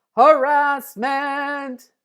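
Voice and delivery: very loud, high shout. Leading students in repeating a vocabulary word: saying the word really loud. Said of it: "let's say it really loud".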